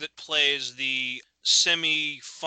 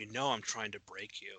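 barely audible, very soft half-whisper; 5 semitones lower, 13 dB quieter than usual. Retelling how an actor half-whispered to a castmate during a take: imitating someone half-whispering. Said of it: "at one point he's whispering to the guy".

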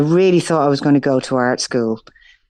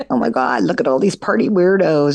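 silly, put-on LA valley girl voice. Speaker recalling acting on a track, la valley girl voice. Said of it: "pretend to be like a valley girl from LA".

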